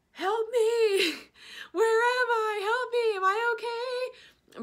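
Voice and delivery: very high, stretched-out, drawn-out screaming cries. Retelling waking up high on painkillers, imitating a scream. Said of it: "I started screaming".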